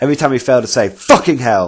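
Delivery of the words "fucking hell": angry, aggressive voice. Retelling what an opponent said at the table: imitating an aggressive opponent. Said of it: "Really aggressive".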